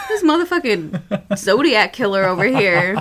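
normal talking voice

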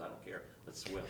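ordinary delivery

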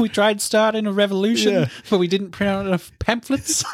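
put-on New Zealand accent, pitched high. Praising an actor's funny accent, quoting a line in Korg's New Zealand accent. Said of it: "His New Zealand accent".

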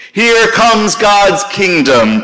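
high, loud shouting voice. Voicing a proclamation shouted from the street corner, shouting. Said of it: "Jesus shouts from the street corner".

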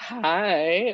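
voice breaking on hi, high and drawn out. Greeting the host who just welcomed them, voice cracking. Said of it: "Voice crack, right?".

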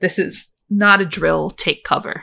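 words broken up by laughter. Quoting a missile alert message, laughing while speaking. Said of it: "I can't actually say that without laughing".

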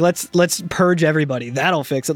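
mock-sarcastic delivery. Describing a character's reaction, the speaker acts out his very sarcastic line. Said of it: "being very sarcastic".

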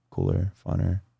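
hushed whisper. Answering a question about buying a Sprinter van or a truck, whispering. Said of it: "Stop whispering".

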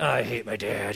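mock-muttering under breath. Recalling shoveling a long sidewalk of heavy snow, retelling a mutter under breath. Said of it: "under my breath".

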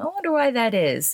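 tongue-in-cheek musing. A speaker addressing listeners wonders aloud: facetious question. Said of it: "she asks facetiously".

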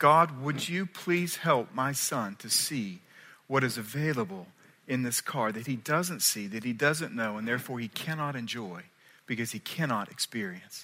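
hushed, prayer-like voice.

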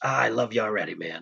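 put-on muttering under breath. Retelling what a dad said under his breath; retelling words under his breath. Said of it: "he says under his breath".

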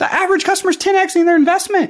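fired up. Speaker pitching his organization's investment results to an audience, fired up. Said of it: "I'm getting all fired up right now".

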